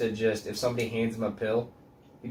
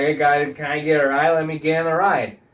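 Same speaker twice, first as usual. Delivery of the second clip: loud, mock boozy drunken speech; 5 semitones higher, 8 dB louder than usual. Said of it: "the guy was fucking drunk and stupid".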